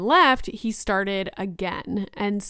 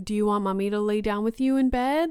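mock super-calm, loving, soothing parent-like voice. Parent retelling how they spoke to their child, imitating their own super-calm tone. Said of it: "just being super calm, trying to be super loving".

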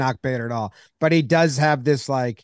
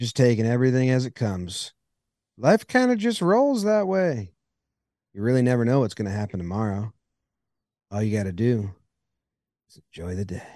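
laid-back, relaxed drawling voice; 2 semitones lower than usual. Reading a baseball player's quote aloud in a McConaughey voice. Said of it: "when you say that in a McConaughey voice".

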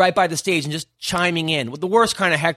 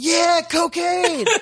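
mock, very high-pitched shouted yell; 12 semitones higher than usual. Retelling a heckler shouting during a joke: imitating a heckler yelling. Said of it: "the guy yells out".

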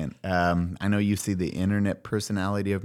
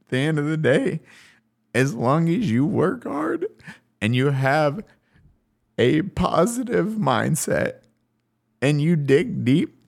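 tearful crying voice, higher pitch; 7 semitones higher than usual. Speaker addressing an audience they appreciate, crying. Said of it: "I'm sorry I'm crying right now".

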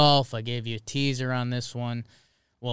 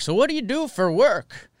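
put-on high, loud, old-timey 1920s New York accent; 11 semitones higher, 5 dB louder than usual. Retelling what older golf partners asked around hole 3, in an old-timey New York accent. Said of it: "Whatever accent that was".

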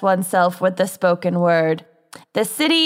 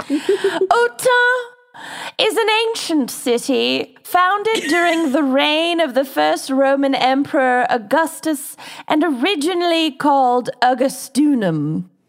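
high, queenly royal British accent, read aloud; 8 semitones higher than usual. Starting to tell a case in a Queen Elizabeth II accent. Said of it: "attempt my best Queen Elizabeth the Second accent".

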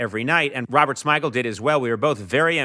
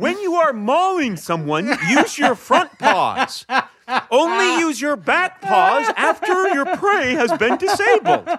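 very high, loud animal character voice, bear; 5 dB louder than usual. Acting out a sketch where a bear gives advice: voicing a bear. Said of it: "his advice would be".

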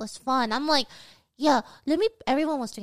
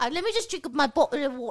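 poor, botched fake British accent. Offering to voice a British character, the speaker shows a bad British accent. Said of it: "You sound like a British person with a concussion".

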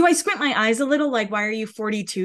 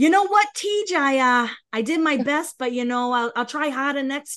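fake Boston accent, higher pitch; 4 semitones higher than usual. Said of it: "she is like".

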